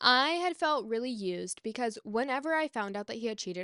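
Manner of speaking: ordinary delivery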